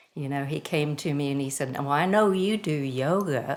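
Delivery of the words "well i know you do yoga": imitated, put-on slow southern drawl. Retelling what a marathon-running friend said about yoga: imitating a friend's southern drawl. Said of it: "in this southern drawl".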